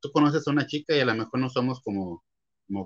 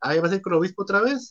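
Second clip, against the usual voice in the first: snide, sarcastic jab, pitched up; 8 semitones higher, 4 dB louder than usual. Retelling how someone spoke to them grudgingly, retelling a sarcastic jab. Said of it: "así como tirándome la sarcásticamente".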